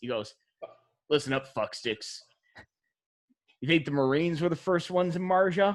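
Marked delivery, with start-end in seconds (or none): 1.1-5.8 thick-lipped talk, as through a fat lip. Describing a man he knew, the speaker imitates how he talked with a fat lip. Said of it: "He talked like this".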